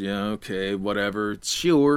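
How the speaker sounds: reluctant, low, slow half-hearted mumble. Narrating the other three in the group answering Odessa: half-hearted mumble. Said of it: "half-heartedly mumbled".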